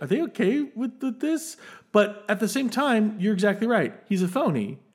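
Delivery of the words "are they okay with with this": high, worried tone. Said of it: "I was worried".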